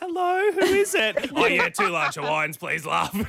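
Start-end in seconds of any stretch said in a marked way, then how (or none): 0.0-1.3 put-on very high, slow little ten-year-old child voice. Picturing a 10-year-old answering; 10-year-old's little tiny voice. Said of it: "a 10-year-old's little tiny voice".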